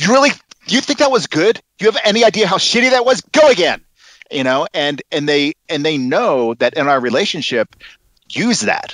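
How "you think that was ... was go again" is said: harsh lashing out, much higher. A director demonstrates how he might speak to an actor after a take, lashing out at an actor. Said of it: "I start lashing out".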